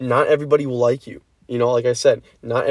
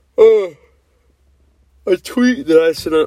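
loud, pitched-up speech through a yawn; 5 semitones higher, 6 dB louder than usual. Talking to viewers while checking something, yawning. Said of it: "Sorry, I'm yawning".

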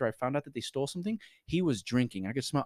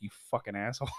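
put-on sly, mischievous smiling voice; 3 semitones lower than usual. Retelling how she reacted in the hall, imitating a mischievous smile. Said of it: "with this little mischievous smile, like".

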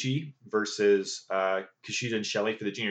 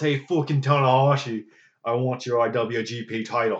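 put-on very Irish accent, called out loud; 2 semitones higher, 4 dB louder than usual. Retelling a challenge to tanahashi for his title, in a put-on irish accent, yelling. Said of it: "A very Irish".

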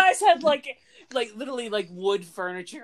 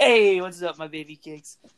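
put-on Italian accent. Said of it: "Why'd you do it like an Italian accent?".

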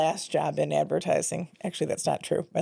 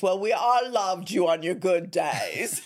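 put-on English accent; 3 semitones higher than usual. Retelling how a man answered when the speaker made amends, in a booming English accent. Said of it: "in booming English accent".

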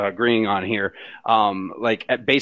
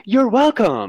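bright, excited, very high voice; 11 semitones higher, 4 dB louder than usual. Retelling how Alexa answered a sincere thank you: imitating Alexa sounding excited. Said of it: "She literally went".

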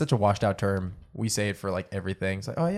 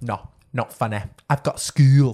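strong put-on British accent, louder; 2 semitones higher, 9 dB louder than usual. Describing a video to friends, quoting the girl in a strong British accent. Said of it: "the strongest British accent".

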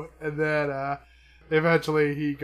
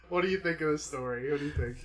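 normal talking voice

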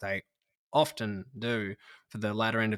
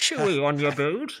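loud, high, big taunting voice; 6 semitones higher, 7 dB louder than usual. Joking about a footballer sledging opponents: Bane voice. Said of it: "sledges with his Bane voice".

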